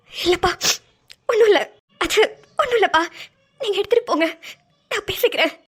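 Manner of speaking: tearful, choked voice holding back tears. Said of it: "ஏன் அழுதுட்டு இருக்கீங்க".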